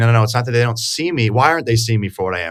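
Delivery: ordinary delivery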